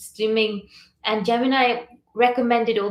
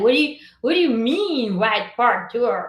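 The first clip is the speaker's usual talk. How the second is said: put-on American accent. Retelling how some people reacted to the tour name, put-on American accent. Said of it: "I'm just giving some American accent for now".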